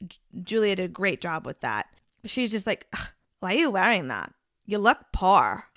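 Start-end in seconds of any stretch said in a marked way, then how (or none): 2.9-5.5 put-on weird, rude, dismissive German-Russian accent. Imitating Anna's way of speaking as shown in the show: Anna's German-Russian accent. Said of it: "I think I nailed that accent".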